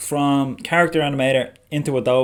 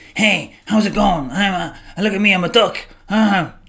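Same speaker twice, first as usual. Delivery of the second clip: pitched-up voice for an animated puppet; 7 semitones higher, 4 dB louder than usual. Imitating how a puppet animator demos a talking duck puppet: imitating a puppet demo voice. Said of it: "he always demos the puppets like this".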